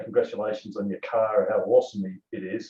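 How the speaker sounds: ordinary delivery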